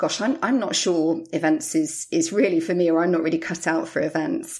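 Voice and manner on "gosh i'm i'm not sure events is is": usual speaking voice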